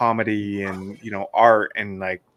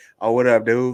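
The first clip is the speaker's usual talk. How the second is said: raised, casual everyday voice, a bit loud; 3 semitones higher, 5 dB louder than usual. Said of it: "he would go back and be like".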